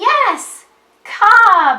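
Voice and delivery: very loud, excited, swooping shout, read aloud. Reading a story aloud as listeners touch each word, in an excited reading voice. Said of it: "read it with an excited voice".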